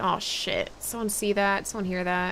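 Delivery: normal talking voice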